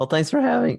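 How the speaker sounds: voice breaking very high, squeaky crack. A guest thanks the host for having them on, voice crack. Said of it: "Oh, wow, voice crack".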